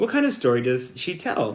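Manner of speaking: plain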